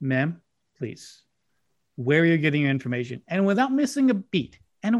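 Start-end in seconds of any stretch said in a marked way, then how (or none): 0.0-3.2 deadpan, straight-faced delivery. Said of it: "I looked at her with a straight face and I said".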